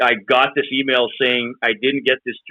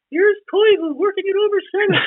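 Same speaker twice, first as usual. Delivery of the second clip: high-pitched play-by-play announcer voice, pitched even higher. Asked for a play-by-play impression, doing a Chris Cuthbert impression. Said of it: "It's just a high voice".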